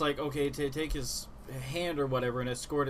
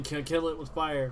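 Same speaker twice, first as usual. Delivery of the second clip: usual speaking voice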